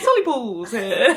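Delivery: put-on young boy catchphrase voice. Teasing the reader by imitating the TikTok boy. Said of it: "like that boy off TikTok that goes".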